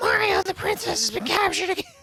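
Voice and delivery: very high, loud, squeaky little toad voice. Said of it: "That's a little bit closer".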